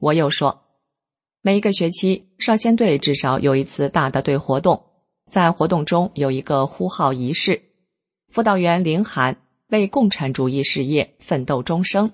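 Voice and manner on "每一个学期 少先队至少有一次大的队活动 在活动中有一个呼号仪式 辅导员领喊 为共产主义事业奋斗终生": usual speaking voice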